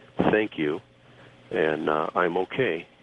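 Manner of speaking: gentle soft voice. Speaker retells a see-through woman thanking him before vanishing, retelling in very soft voice. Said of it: "in a very, very soft voice".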